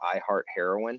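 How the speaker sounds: plain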